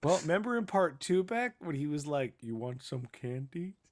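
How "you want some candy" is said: creepy put-on alien voice. Recalling a scene where the Predator repeats a line: creepy Predator voice. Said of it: "it's real creepy the way it's said".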